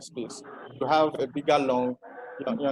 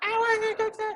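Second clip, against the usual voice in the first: put-on babyish voice, higher pitch. Showing a voice class how a baby-like voice sounds: baby voice. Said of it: "I'm trying to sound like a baby".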